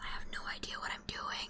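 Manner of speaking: hushed, breathy whisper under the breath. Making a joking aside after calling murder investigation fun and easy: whispering.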